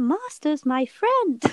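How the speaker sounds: high, loud, belted funny voice. Asked by the other speaker to do the voice, in an Arwen voice. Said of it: "Do the voice".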